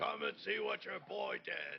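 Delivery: high, rough, called-out voice. Playing a character calling out a boss in a game: in-character yelling. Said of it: "I am yelling".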